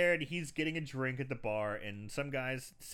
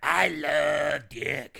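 put-on smoker's voice, much louder; 10 dB louder than usual. Describing a drag queen friend, the speaker imitates Madame Marlboro's shut voice. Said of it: "His voice is completely shut".

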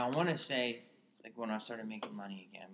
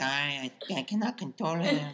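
put-on maid voice; 4 semitones higher, 8 dB louder than usual. Repeating a maid's quoted words from a story, in a stereotyped maid accent. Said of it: "I'm gonna get in trouble for that impression".

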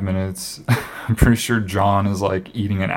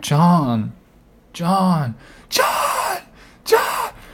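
put-on very high, wildly swinging primal yells; 10 semitones higher than usual. Describing two people screaming each other's names for minutes: imitating primal screaming. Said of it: "it's like this primal screaming".

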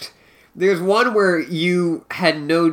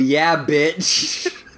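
normal talking voice

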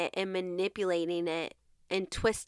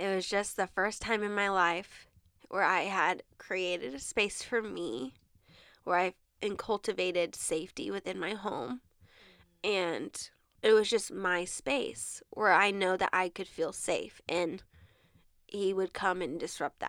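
choked-up, emotional voice thick with feeling. Speaker describing creating a safe space in the apartment, getting emotional. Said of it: "I'm gonna get emotional, dang it".

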